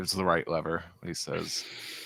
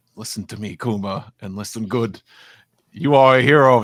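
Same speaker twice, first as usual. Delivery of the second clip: very loud, booming, rousing voice; 4 semitones higher, 9 dB louder than usual. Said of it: "making him sound more like yogurt".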